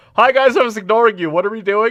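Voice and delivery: shrill, very high, very loud voice. Retelling what a team member says mid-match: imitating a teammate. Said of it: "one of your team members goes like".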